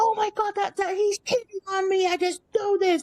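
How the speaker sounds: shrill, very high screech. Retelling a guest on a ghost hunt who thinks her husband cheats: imitating a woman screeching. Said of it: "I could hear her screeching".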